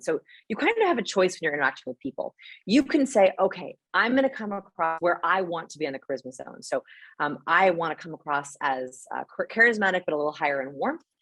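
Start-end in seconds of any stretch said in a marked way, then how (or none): none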